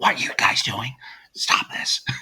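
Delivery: soft, hushed, whispered scolding tone. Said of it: "it's all whispering".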